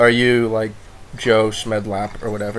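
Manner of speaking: usual speaking voice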